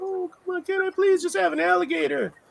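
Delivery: put-on very high, begging little kid voice. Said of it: "the baby begging eyes".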